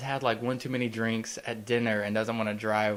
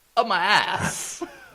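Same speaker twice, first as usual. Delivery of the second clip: put-on New York actor voice, higher and louder; 10 semitones higher, 7 dB louder than usual. Joining in with an impression of a watch speech: Christopher Walken impression. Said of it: "You got a pretty good one".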